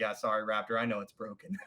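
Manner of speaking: low, muttered aside under the breath. Retelling a remark to an opponent in a match: imitating muttering under breath. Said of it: "I say under my breath".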